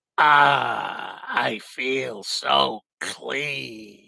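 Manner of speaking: rough, slow, drawn-out "Ah". Performing a line that a viewer asked for: Klugman voice. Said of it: "in Klugman's voice".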